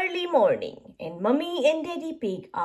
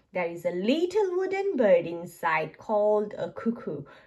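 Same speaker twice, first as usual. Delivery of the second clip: plain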